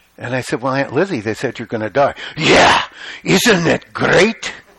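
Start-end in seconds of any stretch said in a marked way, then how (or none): 2.4-4.5 gravelly Russian voice, very slow, drawn out. Retelling an aunt's reply, in Aunt Lizzie's gravelly Russian voice. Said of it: "She had this real gravelly Russian voice".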